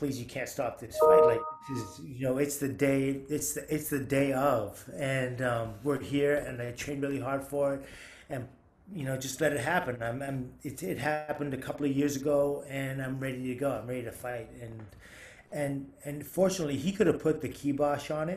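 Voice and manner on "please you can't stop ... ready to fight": normal talking voice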